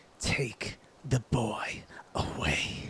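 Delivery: sibilant, snake-like, hissed whisper. Narrating a scene, voicing a character who looks at you, hissing voice. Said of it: "with a hissing voice says".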